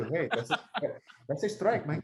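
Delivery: confiding, sidelong mutter under the breath. Retelling how a catcher talked to the umpire: Chooch muttering under his breath. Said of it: "as Chooch would do".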